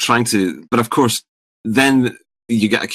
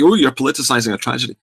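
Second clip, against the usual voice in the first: plain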